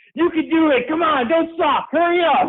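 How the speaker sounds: mock high-pitched yelling, encouraging tone. Retelling encouraging oneself during a painful run: imitating yelling at oneself. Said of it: "yelling at myself".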